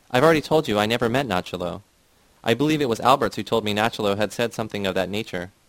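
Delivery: ordinary delivery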